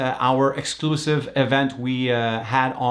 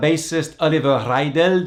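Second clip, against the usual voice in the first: put-on German accent on the name. Podcast host introducing a vintage interview with the band's bassist, in a put-on German accent. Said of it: "That was my German accent".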